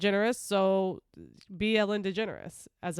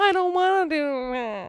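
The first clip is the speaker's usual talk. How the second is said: whiny put-on robot voice, higher and louder; 7 semitones higher, 4 dB louder than usual. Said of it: "That's my C three P O impression".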